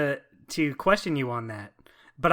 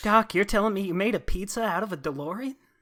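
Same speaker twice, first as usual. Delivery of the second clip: wimpy, timid voice, sounding incredulous; 4 semitones higher, 4 dB quieter than usual. Asking Doc a question as Marty: wimpy Marty impression. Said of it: "my Marty impression is just making him sound like the wimpiest".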